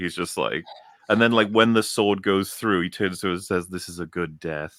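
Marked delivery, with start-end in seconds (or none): 3.7-4.8 soft, slow, casual, menacing tone. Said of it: "very casually".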